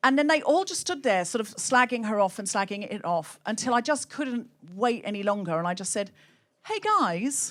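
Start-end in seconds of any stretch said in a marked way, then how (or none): 6.6-7.5 play-acted charming, disarming, pleasant, friendly tone. Retelling greeting a group who were slagging off a woman: imitating own charming greeting. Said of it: "Very charmingly, I thought".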